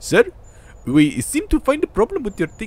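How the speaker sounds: really bad put-on Indian accent, very high. Quoting what a man said to him, in a really bad Indian accent. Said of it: "I'm sorry if this is like a really, really bad like Indian accent".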